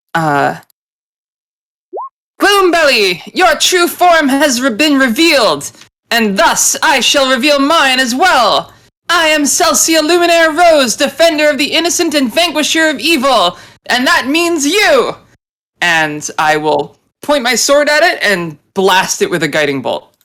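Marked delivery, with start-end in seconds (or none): 2.4-15.2 high, heroic put-on cry. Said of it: "and yells out".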